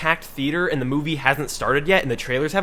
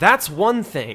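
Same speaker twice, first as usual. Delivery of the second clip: plain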